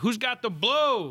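put-on shrill, very high, drunken shout. Retelling walking hammered from the Tipsy Crow to the Seven Eleven, retelling own drunken yell. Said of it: "Like just yelling it out loud".

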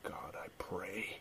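quiet whispered voice. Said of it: "I don't know why I'm talking like this".

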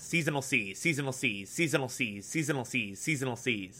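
rapid back-to-back repetition at tongue-twister speed. Trying a tongue twister, saying it five times fast: said five times fast. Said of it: "Try saying that five times fast".

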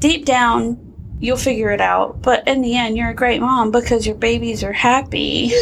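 normal talking voice

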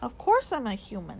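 ordinary delivery

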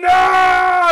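howled, very high, loud, drawn-out no. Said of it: "He's like".

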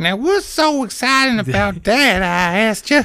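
very high-pitched character voice. Asked to do Ebony's voice, retrying the line in a high-pitched Ebony voice. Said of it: "more high-pitched, like, you think?".

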